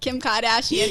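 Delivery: put-on Boston accent on the name. Trying to say a name in an accent: put-on boston accent. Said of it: "I can't even do the Boston accent".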